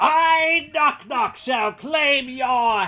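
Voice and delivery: shrill, very high, very loud battle cry. A storyteller voices a character leaping into the room: Knock Knock shouting. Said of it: "and he shouts".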